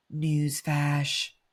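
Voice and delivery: deep voice, dropped an octave. Someone asks them to say the word: lowered voice on 'newsflash'. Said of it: "I need to like lower my voice an octave when I say that".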